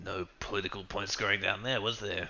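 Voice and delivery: very quiet muttering under the breath. Muttering in character to two companions after a funeral: muttering under breath. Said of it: "I mutter under my breath".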